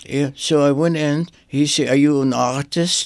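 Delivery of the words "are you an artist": imitated Polish accent. Retelling what a rabbi asked him, in a Polish accent. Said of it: "with the accent, a Polish accent".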